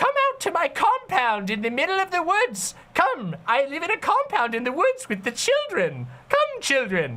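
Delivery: high, swooping, wicked fairy-tale gnome voice. Imitating a line as an evil gnome in a fairy tale: evil gnome voice. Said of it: "a evil gnome would say in, like, a German fairy tale".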